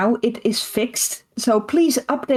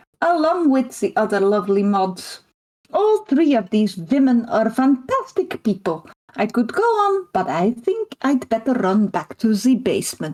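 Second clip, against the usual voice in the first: attempted Eastern European accent. Speaker making their best attempt at Kari's accent. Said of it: "that was my best attempt at Kari's accent".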